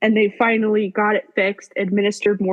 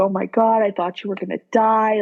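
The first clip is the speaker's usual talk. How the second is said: put-on sobbing voice. Retelling what Justin said at the hospital: imitating Justin sobbing. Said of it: "He was sobbing".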